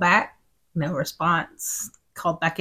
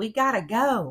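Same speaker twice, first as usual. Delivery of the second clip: mock light, mild called-out yell; 4 semitones higher than usual. Retelling calling out through the building doors: imitating own past yell. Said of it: "I yelled".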